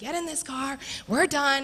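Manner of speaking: frustrated high yelling. A mom recalls trying to get her kids into the car, retelling a frustrated yell. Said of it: "I'm yelling".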